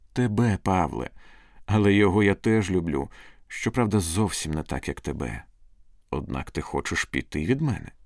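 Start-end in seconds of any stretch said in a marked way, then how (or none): none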